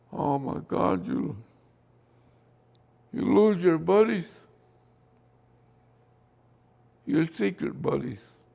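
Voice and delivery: tearful, sniffling voice. Recalling losing buddies in the war, the speaker talks tearful and sniffling.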